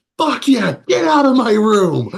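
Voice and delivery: put-on very high, shrill, loud teen voice, "room" drawn out. Narrating to players as the bird leaves, their Zonpato shouts in the most teenager voice. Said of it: "in the most teenager voice you have ever heard".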